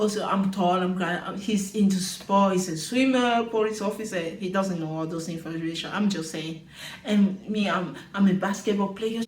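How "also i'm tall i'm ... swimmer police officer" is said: ordinary talk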